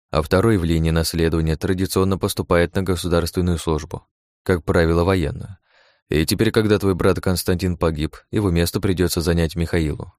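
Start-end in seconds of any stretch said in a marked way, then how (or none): none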